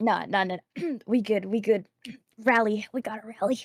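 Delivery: strained words after a coughing, choking fit. Introducing themselves after choking on water, recovering from choking on water. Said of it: "I'm choking on water".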